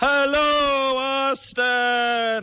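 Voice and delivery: acted big-room stage voice, high-pitched, slow, projected. Retelling greeting the crowd on stage, in a projecting, slow stage voice. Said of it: "You have to kind of project and speak slowly".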